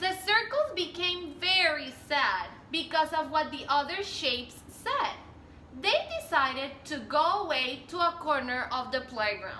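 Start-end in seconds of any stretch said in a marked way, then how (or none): none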